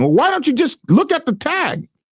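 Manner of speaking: very high-pitched, indignant, almost yelled. Retelling arguing on the phone about a dog: imitating own near-yell. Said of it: "almost yelling".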